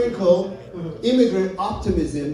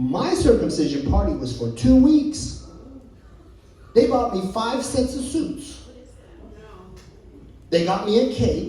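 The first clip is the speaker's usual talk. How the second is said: ordinary talk, nothing marked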